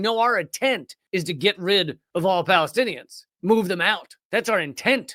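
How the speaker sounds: ordinary talk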